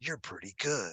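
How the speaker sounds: chilling character voice. Retelling a con signing where a voice actor pointed and said a line: Solid Snake voice. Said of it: "in that Snake voice".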